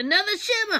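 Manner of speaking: excited, delighted exclamation, high pitched.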